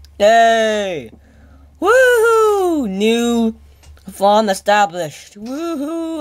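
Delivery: high, sing-song, drawn-out joyful whooping. Streaming a game, celebrating a newly established farm, jumping for joy. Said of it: "I'm jumping out for joy".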